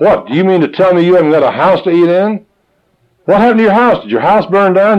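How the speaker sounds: fast, mock scathing, sarcastic delivery. The speaker acts out Paul addressing the church, mock-sarcastic as Paul. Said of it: "Paul is so sarcastic in there".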